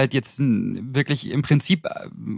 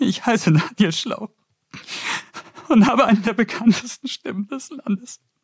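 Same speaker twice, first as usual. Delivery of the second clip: put-on tearful, weepy crying voice, pitched up; 8 semitones higher than usual. Redoing his own self-introduction as if weeping, mock-tearful crying voice.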